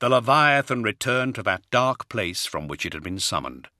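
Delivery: plain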